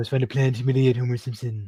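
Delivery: put-on evil, old-sounding voice. Showing another speaker a cartoon character impression: Mister Burns impression. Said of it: "That is a good impression".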